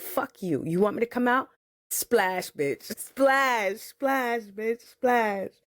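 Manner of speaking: put-on baby voice full of attitude. Retelling a birth, voicing the newborn with an attitude: imitating Matthew with an attitude. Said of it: "You know how I know he came out with an attitude?".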